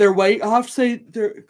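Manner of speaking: talking through a yawn. A tired speaker chatting to the guys watching, yawning while talking. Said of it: "Sorry, guys, I'm yawning".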